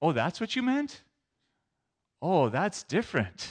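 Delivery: meant high and rising, oh falling. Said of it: "depending on where we stress the syllable".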